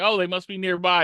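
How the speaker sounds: plain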